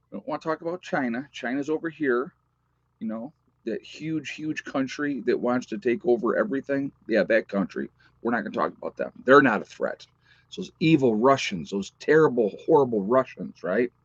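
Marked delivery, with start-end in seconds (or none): none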